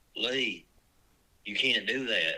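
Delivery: ordinary talk, nothing marked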